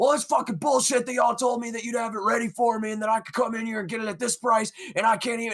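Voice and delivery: mock furious screaming rant, high-pitched. Retelling how a customer started screaming at the speaker, imitating someone screaming. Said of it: "starts screaming at me".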